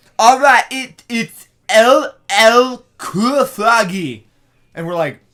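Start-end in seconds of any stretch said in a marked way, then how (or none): 0.2-4.3 put-on child voice, higher and louder. Retelling what a kid fan said, imitating his voice. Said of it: "This is verbatim how he sounded".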